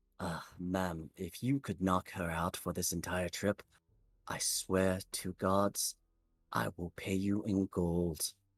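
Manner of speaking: soft, hushed half-whisper. Game narrator voicing a voice that enters a player's head, in a soft half-whisper. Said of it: "a soft whisper enters the back of your head".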